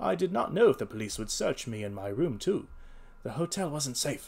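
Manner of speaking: plain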